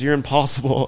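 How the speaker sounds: acted-out angry, mad voice. Retelling how she walked off: imitating her getting mad. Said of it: "getting mad".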